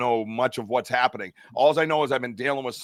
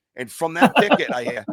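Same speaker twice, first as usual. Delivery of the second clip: ordinary talk, nothing marked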